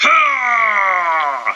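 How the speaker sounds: shouted ha, high and loud. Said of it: "she's like".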